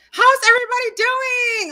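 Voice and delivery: loud, high calling out. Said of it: "I'm talking so loud".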